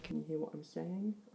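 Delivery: hushed, very quiet, soft voice. Testing how the audio sounds, speaker asks a question very quietly. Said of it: "if I speak very quietly".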